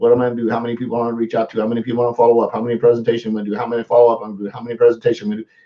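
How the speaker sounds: rattled off at top, rapid-fire speed. Speaker fires questions at an audience to make an impact, talking really fast. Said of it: "I'm talking really fast on purpose".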